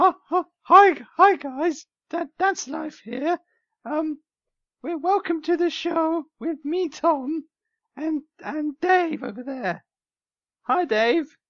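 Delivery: halting, very high pitch and very slow pace. Opening the show as agreed when swapping roles: imitating Dave. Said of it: "You do an im-, impression of me".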